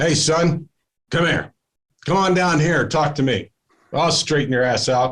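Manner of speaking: tough, sergeant-like delivery. Retelling a Marine gunnery sergeant calling him down the hallway, doing a Gunny Highway impression. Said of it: "like Gunny Highway, Clint Eastwood, going".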